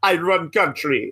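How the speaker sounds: put-on, laid-on-thick Nigerian accent. Mocking Apollo Crews's new accent: Apollo Crews Nigerian accent impression. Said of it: "found out he had a Nigerian ancestor".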